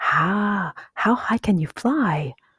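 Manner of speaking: eager and excited, high pitch, very slow, drawn-out. [name], wishing he were going on the trip, asks Jeremy, in excitement. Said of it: "asked Jeremy in excitement".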